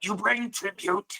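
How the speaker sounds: high, raspy, lizard-like reptilian creature voice. Game master voicing a creature speaking Draconic down a tunnel, in a rasping reptilian voice. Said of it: "this this rasping um, reptilian voice".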